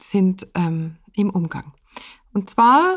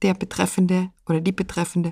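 ordinary delivery

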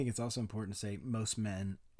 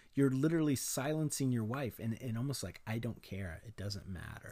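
usual speaking voice

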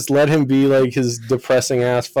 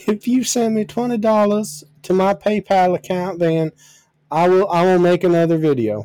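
put-on higher-pitched Georgian accent; 6 semitones higher than usual. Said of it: "I can't do their voices any different".

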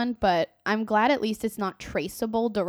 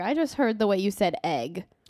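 ordinary talk, nothing marked

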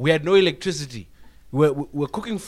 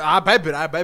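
ordinary talk, nothing marked

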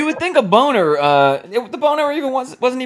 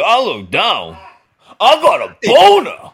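put-on outraged explosion; 6 dB louder than usual. Imitating a caller's reaction to seeing men kiss on tv: imitating an outraged outburst. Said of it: "the outrage explosion".

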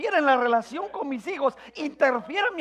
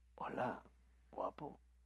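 seductive, sensual, breathy whisper; 20 dB quieter than usual. Speaker showing the first thing people think of as sensual: sensual voice. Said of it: "Cuando alguien piensa en algo sensual".

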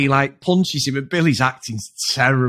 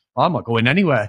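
mock childish tone, plain and unfazed. Retelling a character's reply to being told to leave: imitating a childish retort. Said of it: "like a kid would do".

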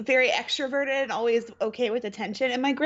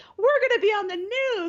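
overjoyed, super excited and very high-pitched; 10 semitones higher than usual. Telling a story about a man reacting to the news people, retelling someone super excited. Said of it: "He's like super excited".

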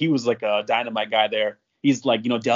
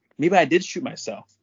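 tentative, hesitant, pitched-up little voice; 5 semitones higher than usual. Retelling what a guy said a minute later: soft voice. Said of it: "goes like in a soft voice".

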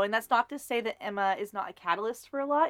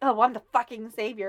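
put-on heated, angry, mad outburst. Retelling how Emma reacts to being the savior: imitating Emma angrily. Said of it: "she gets so mad about it".

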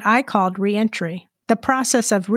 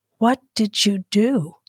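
slowly stressing each word, slower pace. The narrator finally asks the next obvious question, slowly emphasizing each word. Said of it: "slowly emphasizing each word".

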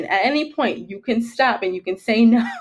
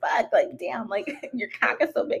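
fake aroused breathy whispered moan, flattering; 7 dB quieter than usual. Retelling her own fake flattery during sex: imitating her own fake flattering moan. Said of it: "I wanted to boost this man's ego".

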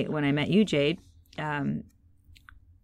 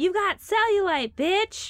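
high, loud heckling yell. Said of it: "A woman behind us yelled".

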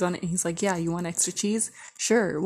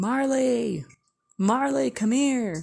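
mock dad voice, high, drawn-out hollering yell; 5 semitones higher, 4 dB louder than usual. Retelling when the girl's dad started calling for marley: retelling a dad's yell. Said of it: "we hear her dad start yelling".

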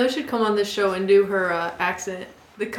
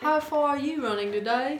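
attempted Australian accent, pitched up; 5 semitones higher than usual. Trying out the accent after hearing it: attempting an Australian accent. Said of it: "Is that good?".

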